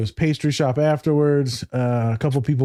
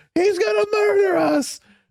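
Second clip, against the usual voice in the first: mock, very high, piercing, screamed-out cry. Retelling how the dude in the back of the car reacted: imitating someone screaming. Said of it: "starts screaming murder".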